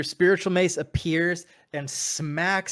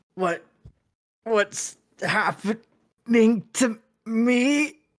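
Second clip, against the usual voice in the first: pained, very slow, high-pitched hurting voice; 7 semitones higher, 4 dB louder than usual. Voicing a character who clutches his head: in pain. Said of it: "Almost like he's kind of in pain".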